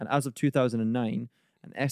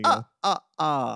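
put-on vampire voice, higher pitch; 4 semitones higher, 4 dB louder than usual. Showing how the Count from Sesame Street counts bats: the Count from Sesame Street voice. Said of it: "he goes".

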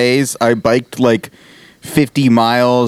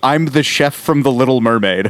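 ordinary delivery

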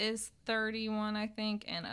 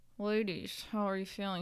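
imitated mumbling in a put-on voice. Imitating how Nick talks to the ladies, mumbling with mouth barely open. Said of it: "He doesn't even open his mouth".

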